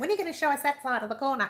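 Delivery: nagging, whiny, high pestering voice. Retelling what viewers keep asking: imitating viewers' pestering voice. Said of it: "and they use that voice too".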